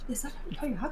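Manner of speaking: very quiet, hushed, murmured whisper. Recounting people recognizing a celebrity nearby, retelling crowd whispers. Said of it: "Like a bunch of whispers of just his name".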